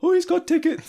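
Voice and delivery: put-on very high, loud, funny teen voice. Retelling what a teenage usher said between two arguing men: The Simpsons funny-voiced teen. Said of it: "like in The Simpsons, the one with the funny voice".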